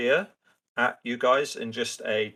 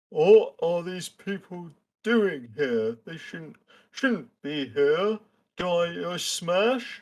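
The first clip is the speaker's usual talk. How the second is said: high-pitched ogre character voice; 6 semitones higher than usual. Game master voicing an ogre waving a club at the players, ogre voice. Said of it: "The ogre goes".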